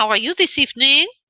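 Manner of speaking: fake French accent held throughout. A spirit medium greets Karen, who is waiting with a life question, in a put-on French accent. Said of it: "this is Spirit Medium [name] with a French accent".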